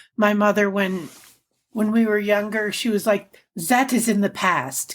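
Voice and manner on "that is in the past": heavy, thick put-on French accent. Retelling what a mother said about the past: put-on thick French accent. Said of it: "she had a very thick French accent".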